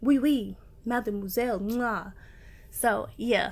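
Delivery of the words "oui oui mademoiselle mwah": put-on, stock cliché French accent. Describing laying edges as an art, switching to a put-on french accent. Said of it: "I need a French accent to say this right now".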